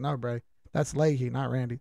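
ordinary delivery

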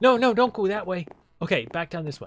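high, panicky, urgent. Gamer telling them which way to go in a game, panicking. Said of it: "I'm panicking".

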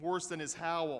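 ordinary delivery, nothing marked

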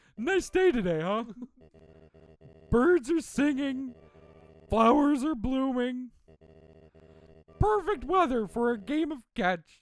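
loud, swooping puberty voice. Voicing a character in a comedy scene, in a voice like he's in puberty. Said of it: "He sounds like he's in puberty".

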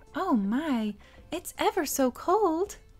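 very sweet and coy. Acting out a taught line to charm a boy: very sweetly. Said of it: "then ever so sweetly say".

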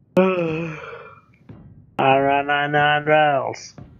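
auctioneer-style speech.

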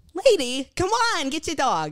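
loud, swooping put-on New York accent. Retelling what the speaker told a dog owner, in a New York accent. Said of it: "You already got the New York accent down".

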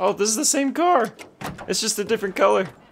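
very high voice breaking and cracking. Spotting a car like the brother's, the speaker talks with voice cracking. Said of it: "Did I just voice crack right there?".

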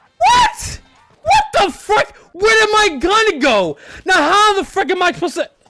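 shocked, disbelieving yelling, high and loud.

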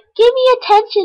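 very high-pitched begging dog voice.

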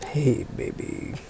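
teasing, joking, barely voiced, very soft whisper. Answering a mic check request to say something again: whispering as a joke. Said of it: "Not whispering".

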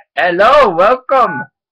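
very loud, high-pitched fake foreign accent. Joking about how to answer a phone call, in a fake foreign accent. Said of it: "answer it in a foreign voice".

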